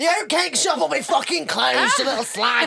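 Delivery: very high, loud, hard shout. Imitating a parent shouting a child's name: imitating Tommy Fury shouting. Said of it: "shout a name like Venezuela in the kind of accent that Tommy Fury has".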